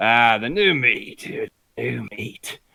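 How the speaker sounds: put-on cocky, heavy chain-smoker's voice. A character in the speaker's story stands up and speaks; voice like a chain smoker. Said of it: "voice sounding like a complete chain smoker".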